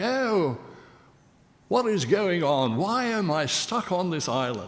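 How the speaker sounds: put-on old English accent. Retelling how he talked when acting as an old-time Englishman, in a 17th-century Englishman accent. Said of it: "I would talk like".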